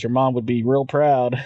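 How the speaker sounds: ordinary talk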